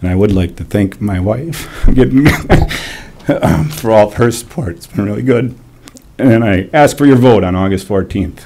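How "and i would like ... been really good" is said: choked up, emotional voice. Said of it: "sorry to get choked up".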